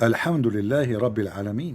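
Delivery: ordinary delivery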